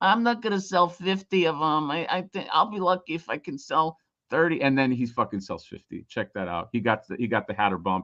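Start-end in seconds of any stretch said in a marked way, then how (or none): 0.0-4.6 put-on griping, complaining voice. Imitating Johnny complaining, for the other speaker: impression of Johnny complaining. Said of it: "you ready for my impression?".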